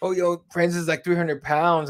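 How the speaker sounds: ordinary delivery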